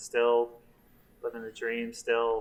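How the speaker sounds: low, soft, flat, joyless, unhappy murmur. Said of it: "you don't sound happy though".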